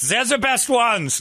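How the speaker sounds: put-on drawn-out, slow German accent, very high. Joking about a tennis player's comment: Boris Becker German accent. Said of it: "you don't wanna hear in a German accent".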